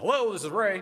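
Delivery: put-on very high, loud New Jersey accent. Retelling a phone call with Ray Evernham: Ray Evernham's New Jersey accent. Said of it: "in his New Jersey accent".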